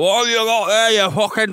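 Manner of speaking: put-on Scottish accent, high-pitched babbling. Comparing English people and Scots, imitating a Scottish person. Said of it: "to Scots who are just like".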